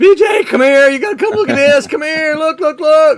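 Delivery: very loud, very high, excited yelling. Speaker recounting calling his wife over to see the page, retelling a yell. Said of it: "I yelled at my wife".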